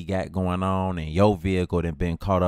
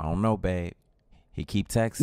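plain

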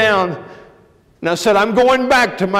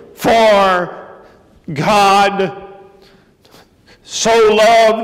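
put-on slow, agonized reading-aloud voice. Retelling how a man with a fifth-grade education read aloud, acting out agonized slow reading. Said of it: "he went slow and agonized".

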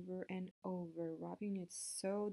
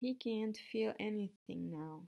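ordinary delivery

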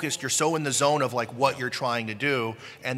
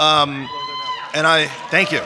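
ordinary talk, nothing marked

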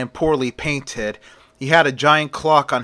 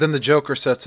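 ordinary delivery, nothing marked

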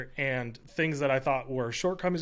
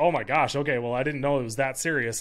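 put-on laughing while talking, louder; 4 dB louder than usual. Retelling the boss's reaction to his list: imitating someone laughing while talking. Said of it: "and she just laughs".

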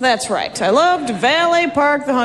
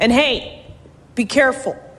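acted, mock-stern tone. Retelling how they hand the valet attendants their keys, acting out saying it sternly. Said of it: "say very sternly".

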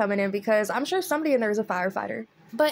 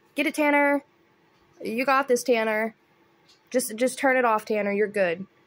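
usual speaking voice

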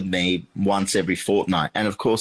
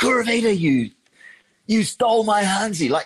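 very high, shrill, full-throated scream; 13 semitones higher, 3 dB louder than usual. Retelling what a restaurant owner said on arrival: imitating someone screaming. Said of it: "He just screamed it at me".

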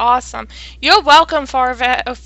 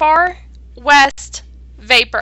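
slow, unhurried, deliberate, carefully spaced words. A host names tonight's topic, Far West Vapor, saying it slowly. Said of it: "I have to say that slow".

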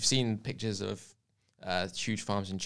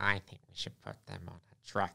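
sinister, creepy put-on American accent; 5 dB quieter than usual. Imagining how a man's voice probably sounds, in a creepy put-on American voice. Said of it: "my creepy American voice".

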